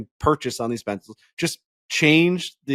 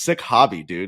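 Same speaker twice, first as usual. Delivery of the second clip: muttered under the breath, lower and slower; 5 semitones lower than usual. Telling how a guy got into the car and spoke, retelling a muttered aside. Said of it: "under his breath he goes".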